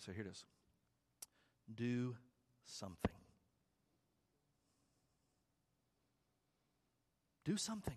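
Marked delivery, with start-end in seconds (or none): 1.7-8.0 very slow, deliberate, each word set apart. Speaker sharing a point with listeners so they don't miss it, said very slowly. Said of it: "I'm going to say it slowly".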